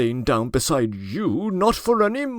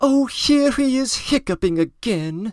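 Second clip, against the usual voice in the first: disdainful, scornful, haughty, high, irritated outburst of annoyance; 7 semitones higher than usual. Reading aloud a lady's complaint about a neighbour: haughty, disdainful irritated cry. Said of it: "cried the haughty and disdainful voice of an irritated lady".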